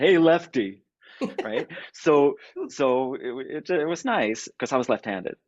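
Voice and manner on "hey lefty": put-on Italian-American accent from Brooklyn. Recalling how a man used to call him lefty: brooklyn italian accent. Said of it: "in the Brooklyn Italian accent".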